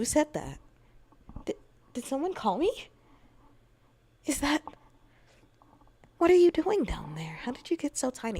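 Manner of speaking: sweet, passive, high, quick character voice. Demonstrating a new tone for a female character, the speaker uses a very soft character voice. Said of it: "like a very soft voice in comparison to".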